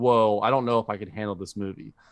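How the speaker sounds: ordinary delivery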